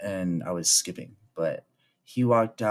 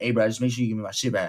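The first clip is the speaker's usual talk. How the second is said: put-on street talk style of speaking. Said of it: "the way he said it, too".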